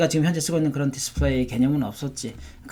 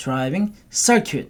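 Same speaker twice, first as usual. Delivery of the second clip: circuit with strong stress on first syllable cir-. Teaching the term driving circuit, stress on cir in circuit. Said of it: "첫 번째 써가 좀 세게 나옵니다".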